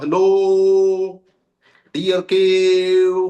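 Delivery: called out loud, shouting. Retelling how he called out hello to the cave: called out loudly. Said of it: "ऐसे बोला वो जोर से".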